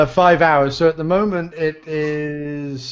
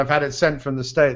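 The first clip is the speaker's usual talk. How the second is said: usual speaking voice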